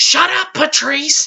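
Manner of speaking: put-on high-pitched yelling, girl character voice. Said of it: "the girl who always yells".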